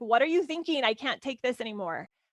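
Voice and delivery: ordinary talk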